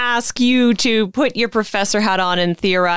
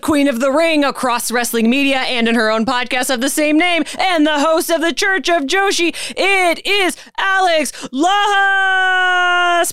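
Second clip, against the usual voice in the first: pitched-up wrestling ring announcer voice, "Lajas" stretched; 7 semitones higher than usual. Introducing a podcast guest, done in a wrestling announcer voice. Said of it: "I'm going to do this in my best impression of a wrestling announcer".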